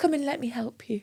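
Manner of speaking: put-on soft, high-pitched little old lady voice. Mimicking a woman who often does this, imitating a little old lady. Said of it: "she's like a little old lady".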